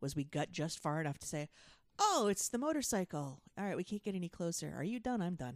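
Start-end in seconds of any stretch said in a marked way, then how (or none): none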